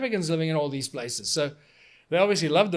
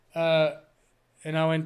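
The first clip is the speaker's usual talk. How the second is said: normal talking voice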